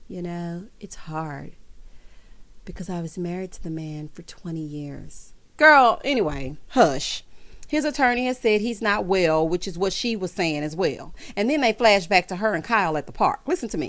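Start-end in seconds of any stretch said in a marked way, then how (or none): 0.1-5.3 low, hushed put-on celebrity voice. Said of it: "let me put my [name] voice on".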